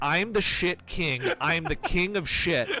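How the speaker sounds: put-on yelling. Retelling how a boy came into the kitchen: imitating someone yelling. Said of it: "He yells".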